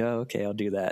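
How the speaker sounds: usual speaking voice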